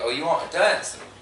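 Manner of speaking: ordinary talk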